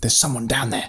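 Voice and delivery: fierce, hissed voice. A narrator reads the father's line in a story, hissing fiercely. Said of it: "my father hissed more fiercely".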